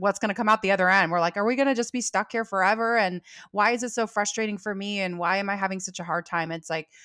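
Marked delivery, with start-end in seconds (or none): none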